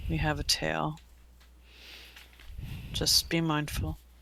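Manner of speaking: muttered under the breath. Voicing a character walking out arm in arm with a friend: said under the breath. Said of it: "she's going to say under her breath".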